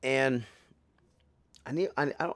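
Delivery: stuttering, halting, broken-off false starts and restarts. Telling a video audience about a party, stuttering. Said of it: "and I'm stuttering".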